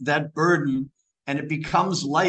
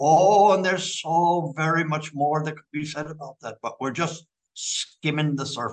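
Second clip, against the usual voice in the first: put-on speaking with an Irish accent. Quoting the line he always ended with, in an irish accent. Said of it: "I can hear that Irish accent".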